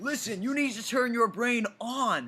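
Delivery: children's cartoon character voice. Imitating the other speaker as a cartoon PSA hedgehog. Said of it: "like a cartoon P S A hedgehog".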